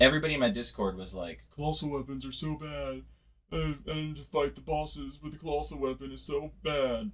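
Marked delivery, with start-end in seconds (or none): 1.6-7.1 put-on posh, eccentric voice, high and soft. Gamer mimicking Discord members' complaints about colossal weapons, in a posh eccentric voice. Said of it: "like posh eccentric voice?".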